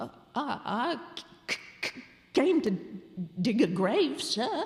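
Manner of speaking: stammering. The man caught in the churchyard answers the goblin, stammering. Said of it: "stammered Gabriel Grubb".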